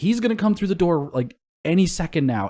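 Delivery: high, loud urgent yell. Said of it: "And then I'm yelling at her".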